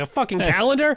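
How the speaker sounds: put-on scandalised, appalled, outraged disbelief. Retelling a character's reaction to getting a calendar: imitating appalled outrage. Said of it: "she's very appalled".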